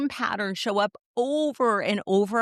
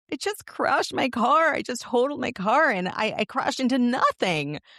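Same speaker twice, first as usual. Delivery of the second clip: choking through tears, crying; 3 semitones higher than usual. Retelling a phone call right after crashing the car: retelling own tearful call. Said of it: "called Andy in tears".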